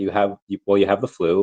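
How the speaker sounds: ordinary delivery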